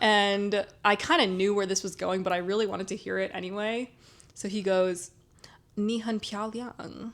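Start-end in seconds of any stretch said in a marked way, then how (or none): 5.8-7.1 put-on horrible American accent while speaking Chinese. Retelling a guy saying a Chinese phrase to her, horrible accent. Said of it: "in like this horrible Chinese accent or horrible American accent".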